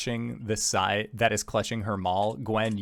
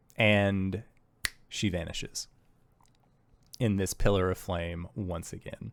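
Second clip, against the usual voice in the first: usual speaking voice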